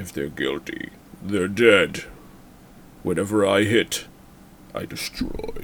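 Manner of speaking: breathy, flat, level monotone. Doing a Dolph Lundgren impression of a Punisher line. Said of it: "it's hard to pull Dolph Lundgren".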